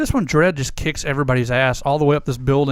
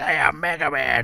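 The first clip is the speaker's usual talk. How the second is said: cartoonish heavy smoker's voice. Describing the old Mega Man cartoon to the other speaker, doing Mega Man's smoker's voice. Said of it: "Mega Man talked like he smoked for 4 years".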